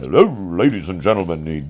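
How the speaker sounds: loud, strange radio announcer voice. Recalling a drummer who'd gone to radio school, strange radio-school voice. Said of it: "He'd have that strange voice".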